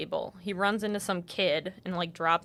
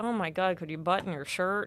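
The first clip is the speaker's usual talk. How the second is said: acted flustered, embarrassed tone. Retelling a movie scene, playing the dad reacting to his daughter, mock-embarrassed. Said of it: "he's like all embarrassed".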